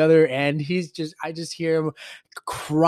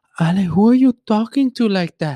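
loud, alarmed, terrified and startled voice; 4 semitones higher, 6 dB louder than usual. Speaker retells their mom opening the door during a game: imitating a terrified mom. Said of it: "she was fucking terrified".

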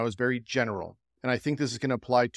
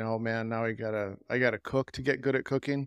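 put-on gloomy voice, quieter; 5 dB quieter than usual. Describing a post's images, voicing the chef in them: mock depressed chef voice. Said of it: "a very depressed chef saying".

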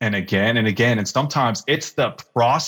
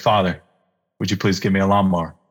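quiet, lower murmur under the breath; 4 semitones lower than usual. Retelling a short prayer made in a store: imitating a quiet prayer under breath. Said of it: "quietly praying under my breath".

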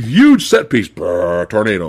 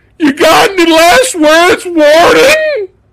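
very high-pitched, overacted, hammy delivery; 4 dB louder than usual. Retelling a ridiculous movie scene, imitating Woody's overacted line. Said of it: "You think I'm overacting?".

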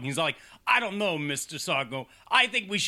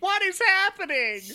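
mock crybaby shriek, very high; 4 dB louder than usual. Retelling a movie scene where Vicky is left screaming: imitating Vicky screaming. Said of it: "Vicky is left screaming".

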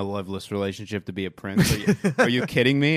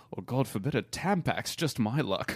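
gentle put-on British accent; 8 dB quieter than usual. Joking with a co-host about coming back as knickers, British accent. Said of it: "I do a pretty wicked British accent".

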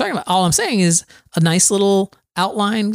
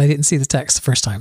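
normal talking voice

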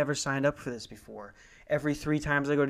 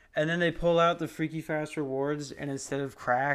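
plain

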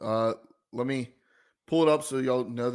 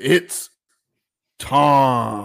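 very loud ring-announcer bellow, drawn-out time; 9 dB louder than usual. Opening a giveaway segment: Bruce Buffer impression. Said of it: "my best Bruce Buffer impersonation".

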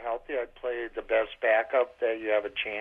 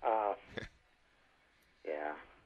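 resigned, defeated, giving-up tone; 5 semitones lower, 9 dB quieter than usual. Answering on a call about the backup quarterback, resigned. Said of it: "The resignation in that guy's voice".

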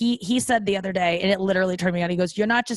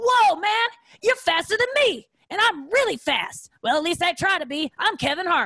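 very high-pitched, jokey comedian-style voice; 10 semitones higher than usual. Retelling a comedian's voice at the end of a run: Kevin Hart impression. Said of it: "was trying to do a Kevin Hart impression".

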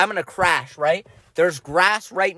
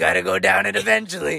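put-on devil voice. Retelling a moment when the shoulder devil spoke, in a shoulder devil voice. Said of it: "The devil looks at me and he goes".

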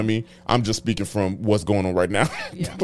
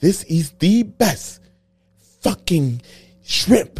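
put-on British accent, higher pitch; 9 semitones higher, 3 dB louder than usual. Imagining a celebrity chef praising the food: imitating Gordon Ramsay. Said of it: "Do you think that's how British people sound?".

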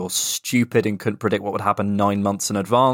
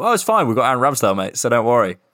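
sarcastic, mock reassuring tone; 2 semitones higher than usual. A podcast host recalls mocking someone during the show, retelling sarcastic reassurance. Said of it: "mocking Aaron Ramsdale the whole way through".

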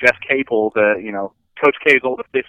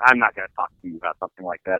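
mock dismissive scoffing, lower pitch; 4 semitones lower, 3 dB quieter than usual. Retelling how a man refused to answer your question: mock scoffing dismissal. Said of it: "he scoffs at me".

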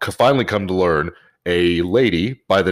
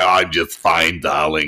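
imitated heavy chain-smoker woman's voice. Retelling a woman's phone reply to his greeting, imitating a heavy smoker woman's voice. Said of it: "she sounds like she smokes a carton and a half a day".

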